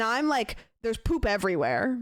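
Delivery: normal talking voice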